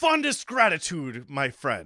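strained, hard-to-hold put-on character voice. Voicing a character who thanks a friend, in a hard-to-hold put-on voice. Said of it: "this voice is really hard to maintain".

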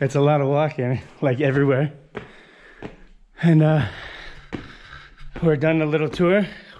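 out of breath, winded voice. At the end of a walking tour, the speaker talks while out of breath. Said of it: "I'm out of breath".

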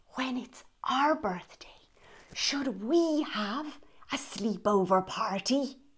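cheerful, happy, soft whisper. Reading a picture book aloud, the narrator voices Dinosaur: happy whispered Dinosaur voice. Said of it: "Dinosaur whispered in his happy dinosaur voice".

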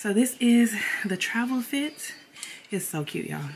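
breathless and panting. Speaker just ran up the steps, showing their travel outfit: out of breath. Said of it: "I'm breathing heavy because I just ran up the steps".

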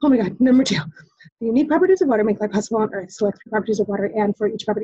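nervous, fast, rushed reading, words jammed through. Acting out a test taker jamming through a question: imitating reading very fast. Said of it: "You're gonna read it so fast".

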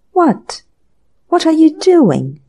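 startled, gasped, high-pitched, slow delivery. A man sees someone pour a teacup's contents into a test tube: gasped question. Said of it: "gasped Mr. Dinsmead".

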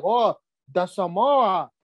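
put-on Samoan-style accent on "Samoa". Speaker imitates how some Samoan people talk, in a put-on Samoan accent. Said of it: "They talk like that".

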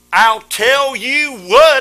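said very loud, calling out. Showing the group the line to say, said real loud. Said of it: "Now say real loud".

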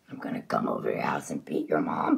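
frightening, menacing monster-style put-on voice. Video maker says what he'd tell Chaos Hunter, in a scary voice. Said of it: "I can get more scary voice than that".

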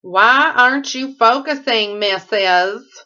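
Southern accent creeping in, slow drawl. Showing off scents to viewers, slipping into a sudden southern accent. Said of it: "all of a sudden have a southern accent".

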